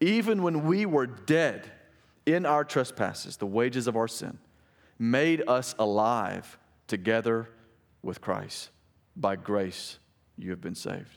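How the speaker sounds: slow, deliberate reading, letting each phrase land.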